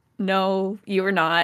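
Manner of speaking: ordinary talk, nothing marked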